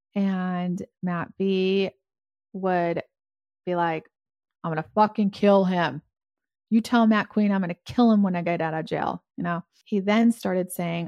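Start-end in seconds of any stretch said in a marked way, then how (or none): 4.6-9.2 furious, seething, raging angry voice. Retelling what matt b said on a jailhouse call: imitating someone furious. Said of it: "He was pissed, like, real pissed".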